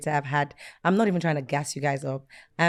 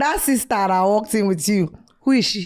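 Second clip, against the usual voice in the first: poor Nigerian accent impression. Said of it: "I put on the worst Nigerian accent".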